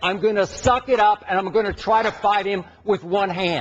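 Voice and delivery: ordinary talk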